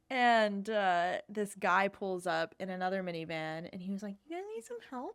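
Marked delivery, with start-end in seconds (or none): 4.3-5.1 very high-pitched cartoon-style character voice. Retelling how a stranger offered help: Ned Flanders voice. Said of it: "a very, like, Ned Flanders".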